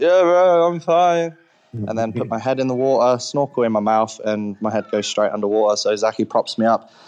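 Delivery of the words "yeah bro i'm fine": play-acted, slow, high, drawn-out drunken delivery. Retelling surfacing from a dive and answering the person filming, mock-drunk reply. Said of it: "I drunkenly respond".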